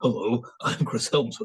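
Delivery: put-on, really deep voice. Joking about passing as Chris Hemsworth with a wig, deep Chris Hemsworth voice. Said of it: "and really deep in my".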